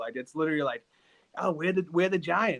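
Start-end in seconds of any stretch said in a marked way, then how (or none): 1.4-2.6 high, mock, harsh, thick Boston accent. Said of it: "such a harsh Boston accent".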